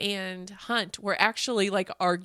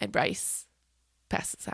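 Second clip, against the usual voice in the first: ordinary delivery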